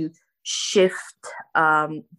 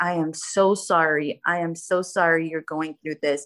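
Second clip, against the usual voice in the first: put-on whispering voice. Retelling what someone said during a hug while the speaker cried: imitating someone whispering. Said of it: "whispering. She's like".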